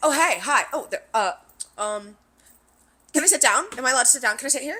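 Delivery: rapid-fire, high-pitched, rattled-off rambling chatter. Retelling how a woman came to their table asking to sit: imitating talking a mile a minute. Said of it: "a mile a minute is like".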